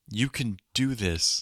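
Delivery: forced, awkward, stiff, very slow delivery. Imitating a character encouraging someone unnaturally: imitating forced awkward encouragement. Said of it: "it's so forced and awkward here".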